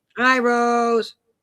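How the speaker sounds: high yelled delivery with one word drawn out. Host greets a viewer watching on Rumble, yelling. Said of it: "I don't know why I'm yelling".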